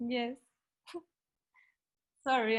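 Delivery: tearful crying. Answering the speaker's question, the listener says yes and apologizes while crying. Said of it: "I'm crying".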